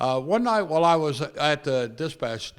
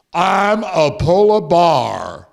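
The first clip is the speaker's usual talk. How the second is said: put-on very loud, angry, booming, drawn-out drunken voice; 3 semitones higher, 11 dB louder than usual. Retelling a phone call, imitating a drunk, angry caller. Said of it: "the voice is a little drunker and a little angrier".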